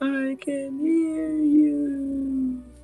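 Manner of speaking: far-off voice, very high-pitched, slow and drawn out. Voicing a reply heard from deep within a bag: very far away voice. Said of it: "You hear very far away".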